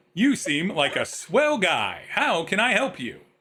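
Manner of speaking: chipper, feel-good, swooping, sing-song machine voice. Game master voicing the feel-good machine as a player's character walks up, feel-good machine voice. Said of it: "you go up to the feel good machine".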